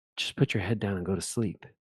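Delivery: hushed, quiet whisper. Retelling telling a tired student to take a nap: retelling a whisper. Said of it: "I would just whisper to 'em".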